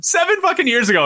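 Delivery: high disbelieving outburst.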